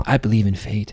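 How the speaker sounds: put-on creepy villain voice. Showing how the game's David talks: David impression. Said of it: "he talks like this".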